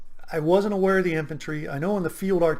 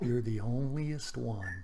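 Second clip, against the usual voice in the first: low whisper, lower and quieter; 5 semitones lower, 9 dB quieter than usual. Retelling a comment made at the first pt formation: imitating a low whisper. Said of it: "in a low whisper".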